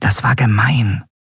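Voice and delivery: whispered voice. Once Captain Nagun stops laughing at someone, Nelen speaks to her friend, whispered to a friend. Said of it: "flüsterte Nelen ihrer Freundin zu".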